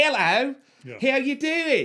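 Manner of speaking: super thick Australian drawl, very high, slow, loud. Quoting how the actress first sounded in the movie: Rachel Taylor's thick Australian accent. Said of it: "she's got a super, super thick".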